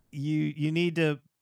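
ordinary talk

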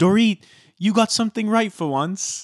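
put-on passive-aggressive British accent. Quoting what Lisa Vanderpump said on the plane: imitating Lisa Vanderpump's British accent. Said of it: "sorry for the British accent".

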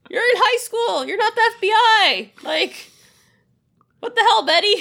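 high, loud, mock exasperated scolding.

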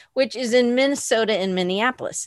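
ordinary talk

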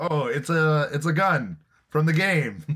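very slow, high, drawn-out broken English. Retelling a conference where Miyamoto showed a game gun: Miyamoto's broken English. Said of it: "in his very bo-, broken English".

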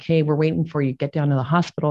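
ordinary talk

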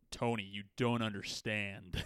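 put-on overpronounced American accent from a British speaker. Imitating Benedict Cumberbatch's American accent in Doctor Strange. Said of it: "Benedict Cumberbatch's American accent in Doctor Strange".

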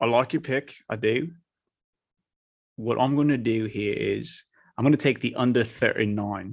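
put-on British accent. Answering another person's pick for the London game: put-on British accent. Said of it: "I'm gonna do this in kind of a British accent".

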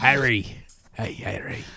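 hushed, breathy character voice. Announcing a plan to play young Hagrid next campaign, doing the Hagrid voice. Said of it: "And I'm going to talk like this".

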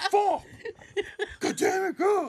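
shrill, very high, slow, fed-up, angry cursing. Describing the zebra at the end of a show, imitating a pissed-off zebra. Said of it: "He's always like pissed off".

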